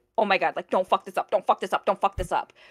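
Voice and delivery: put-on frantic, rushed, panicked voice. Retelling a tense moment during a stream: imitating own past panic. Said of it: "on such a high and also panic-driven".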